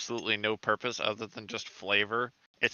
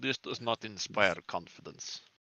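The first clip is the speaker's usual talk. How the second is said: put-on Russian accent; 6 dB quieter than usual. Answering a party member while in character: stereotypical Russian accent. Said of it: "going to be stereotypically Russian for this entire event".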